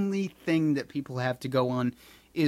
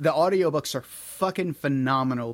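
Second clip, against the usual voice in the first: plain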